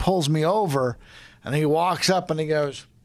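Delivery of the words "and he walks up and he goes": plain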